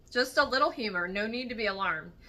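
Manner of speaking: usual speaking voice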